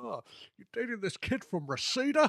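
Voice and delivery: high pushy parent voice. Discussing parents in The Karate Kid, the speaker does an impression of Ali's parents. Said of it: "that was a brilliant impression".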